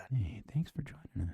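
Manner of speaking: hushed ASMR voice. Signing off to listeners while the music plays, in their ASMR voice. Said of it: "Let's get our ASMR voice again".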